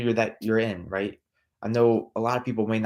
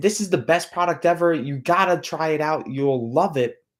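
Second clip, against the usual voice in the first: high, over-the-top, overexcited screaming sales-pitch voice; 6 semitones higher than usual. Showing how not to sound when calling a prospect: over-the-top excited screaming. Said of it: "are you screaming".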